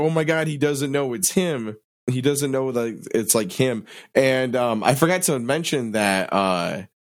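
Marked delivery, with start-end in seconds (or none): none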